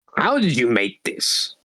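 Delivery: strange, otherworldly, put-on alien creature voice. Playing an alien holding sushi up to its eye, speak in an alien voice. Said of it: "Did you say something in that voice?".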